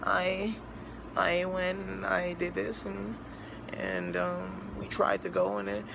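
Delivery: soft, slow, drowny sorrowful voice. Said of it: "drowny, sorrowy voice".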